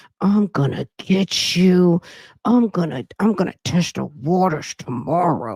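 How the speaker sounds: words squeezed out through clenched teeth and locked jaw. Mocking how a new detective talks, the speaker imitates her talking through clenched teeth. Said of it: "when you clench your teeth together".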